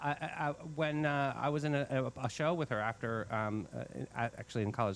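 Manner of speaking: halting, stammering speech with repeated words. Recalling being in a show with a former instructor, stuttering. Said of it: "I'm stuttering".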